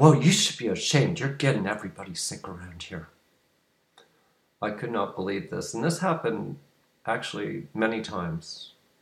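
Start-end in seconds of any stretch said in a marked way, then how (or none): 0.0-3.1 mock-angry, scolding put-on woman's voice. Retelling what a woman passing by at a shopping center said, imitating an angry woman. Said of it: "in this angry voice".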